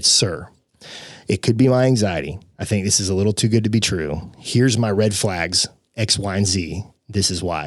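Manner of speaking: usual speaking voice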